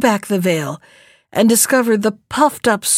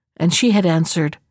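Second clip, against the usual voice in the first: ordinary delivery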